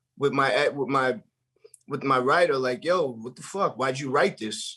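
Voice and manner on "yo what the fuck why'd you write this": put-on argumentative tone. Retelling arguing with the writer over the book: imitating arguing with a writer. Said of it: "I'm arguing with the, with my writer".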